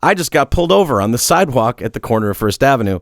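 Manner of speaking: ordinary talk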